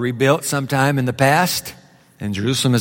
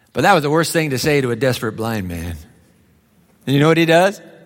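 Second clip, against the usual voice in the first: usual speaking voice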